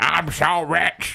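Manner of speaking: showy, boastful, flaunting rich-man swagger voice. Joking about a cigar in the mouth: pretending to flaunt wealth. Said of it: "You flaunt your wealth by getting a real thick poop cigar".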